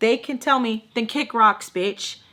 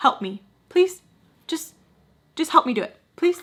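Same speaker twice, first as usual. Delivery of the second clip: mock pleading tone, much higher pitch; 5 semitones higher than usual. Acting out what the speaker said to her, retelling pleading. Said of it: "I'm pleading with her".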